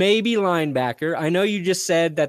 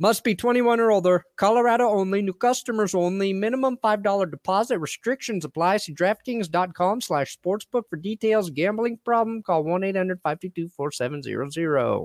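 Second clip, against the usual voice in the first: Wisconsin-style accent; 5 semitones higher than usual. Host reading the sportsbook ad disclaimers, in a Wisconsin accent. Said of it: "Where's the Wisconsin accent coming from?".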